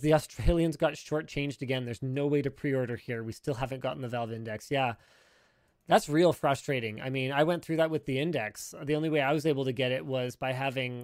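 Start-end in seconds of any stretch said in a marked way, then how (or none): none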